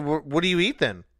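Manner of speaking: ordinary delivery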